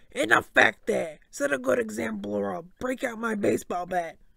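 gruff, loud, rough barking voice. Narrator reads the coach stopping a fight among the students, barked. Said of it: "Coach Hedge barked".

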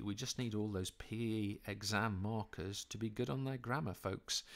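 slow, hushed half-whisper under the breath. Making an aside about exam markers' grammar: half-whispering quietly. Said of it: "I'm gonna whisper this one quietly".

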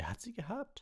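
very high voice, proud and pleased with himself. Narrator reading a portrait knight's answer to the professor, proudly. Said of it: "sagte Sir Cadogan stolz".

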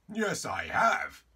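very loud, high, cheery cheerful voice. Answering a bowing visitor's question, cheerful. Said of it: "said King Arthur cheerfully".

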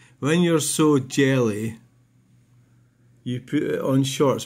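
usual speaking voice

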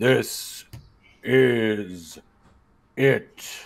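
resounding, big booming voice, drawn out. Telling a story as the lights dim and flicker; big booming voice. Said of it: "I say in a big booming voice".

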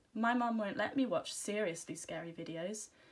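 ordinary delivery

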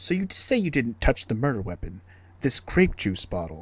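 affected, edgy put-on character voice. Trying out voices for characters, here the edgy character voice. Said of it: "So if I do the edgy voice, be more like".

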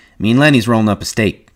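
plain

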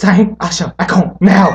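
loud, scolding yell spoken in Bengali. Asked to say mom's yell in her language: imitating mom yelling in Bengali. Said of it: "can you do it in your language".

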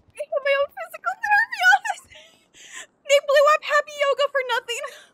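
overjoyed, high, tearful, excited crying through the words. Telling viewers about getting their own physical therapy office, crying with excitement. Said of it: "Oh, I'm actually crying".

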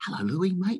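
very high, very polite tone. Retelling how someone knelt at the car window: imitating Jesse, polite. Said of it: "he's so polite. He's like".

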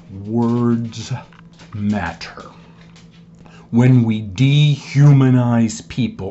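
slow, low, drawn-out, word-by-word deliberate reading. Reading a quote aloud again for the listener: reading slowly. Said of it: "I'm going to read this slower".

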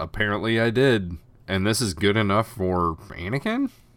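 ordinary talk, nothing marked

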